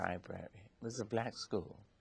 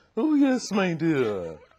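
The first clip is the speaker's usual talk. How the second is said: put-on plummy voice, much higher, louder, slower; 9 semitones higher, 11 dB louder than usual. Showing a friend how Dr. Dorothy Hyde spoke, in Dr. Dorothy Hyde's plummy voice. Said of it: "All the plums in her voice".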